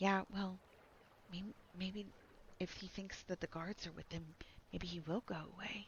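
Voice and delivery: hushed whisper. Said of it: "two females ten feet away from you are whispering".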